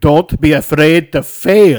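very loud, very slow bad accent, Irish creeping in. Saying a quote after being asked to do it as Arnold Schwarzenegger: Arnold Schwarzenegger accent.

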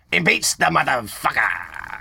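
tossed-off delivery in a put-on jive voice. Retelling how a man puts on a voice when saying what he shouldn't, in a jive voice. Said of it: "throws like some jive on it".

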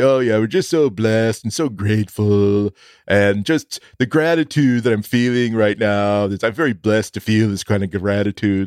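saccharine, sappy, earnest heartfelt testimonial tone. Mocking how people use blessed and grateful: mock sappy sincere voice. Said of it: "you're gonna try to sell me essential oils".

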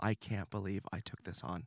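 put-on crying voice. Retelling being on the floor in tears: retelling own crying words. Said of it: "literally on the floor in tears, crying, going".

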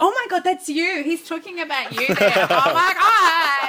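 put-on very high, too-loud, tipsy drunken gushing chatter. Recalling a talk's Q&A, a woman's friend behind her reacts, imitating a loud drunk friend. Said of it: "Her drunk friend behind her is talking far too loud".

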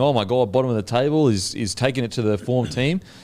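ordinary talk

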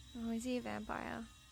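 muttered quietly. Playing Nix, peering into a tomb at a pale man: said under the breath. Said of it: "Nix says under her breath".

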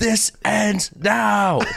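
mock angry seething. Retelling a scene where Hank storms out over an alarm: imitating Hank fuming.

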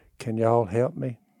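small, soft, meek little voice. Retelling how a woman who had been cursing came back asking for help, meek voice. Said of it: "in a little meek voice".

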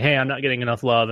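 normal talking voice

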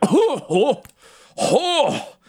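mock out-of-breath gasps and panting, very high. Retelling the scene where the fire leaves his eyes: imitating Yoro panting. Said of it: "always makes me out of breath".

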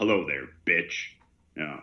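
loud, room-filling drawling cowboy voice. Retelling the voice that speaks to someone bound in a room, in a cowboy drawl. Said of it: "this voice with this bit of a cowboy drawl".

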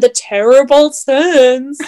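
exaggerated meme voice, drawn-out "Sens". Recapping last episode's talk about the sens: meme voice. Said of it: "I didn't mean to do the meme voice".

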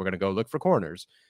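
ordinary talk

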